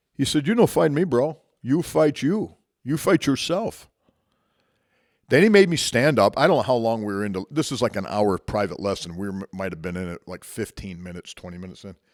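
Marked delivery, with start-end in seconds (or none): 0.5-3.9 put-on Portuguese accent, pitched high. Retelling what the instructor said after the match: imitating a Portuguese accent. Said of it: "going in his Portuguese accent".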